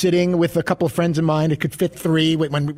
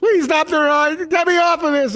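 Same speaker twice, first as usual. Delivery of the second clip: mock desperate, tearful, pleading scream, very high; 12 semitones higher, 3 dB louder than usual. Retelling being stuck on a ride, wanting off: retelling screaming in tears. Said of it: "and I'm screaming".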